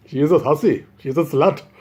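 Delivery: put-on Indian accent. Retelling a Brahmin condemning a woman as a hussy: Indian accent. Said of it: "in Indian accent".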